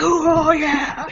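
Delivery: loud, high-pitched, gloating scream. Joking how a player reacted after winning: imitating someone screaming. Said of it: "started screaming in his face".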